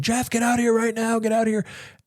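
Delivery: put-on high scream. Retelling a father screaming to his son from the backyard at night, retelling a scream. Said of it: "He started screaming".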